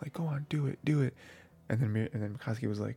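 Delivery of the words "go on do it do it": low-key, restrained, pitched-up little cheer. Retelling how a character cheered someone on: imitating quiet cheering. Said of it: "super quietly".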